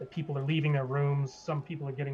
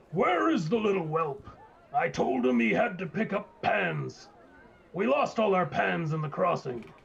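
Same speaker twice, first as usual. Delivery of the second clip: big, resounding, booming bellow; 4 semitones higher, 4 dB louder than usual. Narrating a scene and voicing a different character, in a booming voice. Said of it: "another booming voice, a different booming voice".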